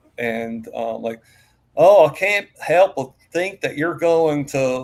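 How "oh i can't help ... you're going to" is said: put-on thick Southern accent, very loud, slow. Recalling a sister's childhood accent: imitating sister's deep Southern accent. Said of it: "my sister had a really deep Southern accent".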